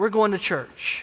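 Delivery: hushed voice. Retelling a doctor's words to a woman, the speaker quotes her in a lowered voice. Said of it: "lowering her voice".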